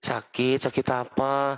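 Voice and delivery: very gentle, tender, mild, kindly tone. Showing how someone speaks to a sick person, retelling in a very soft tone. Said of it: "Lembut banget ya".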